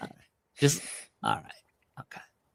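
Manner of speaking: hushed, airy, breathy half-whisper. Trying an impression from a movie line: Vince Vaughn impression. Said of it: "that's my Vince Vaughn".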